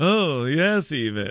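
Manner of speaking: slow cartoon lion voice. Host mid-commentary recalls a cartoon character, Snagglepuss impression. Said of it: "the Hanna-Barbera character that's like".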